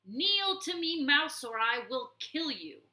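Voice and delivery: raging, stormy fury, loud and high. Reading a story aloud, the warlord threatens a kneeling mouse: stormy angry threat. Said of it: "he stormed".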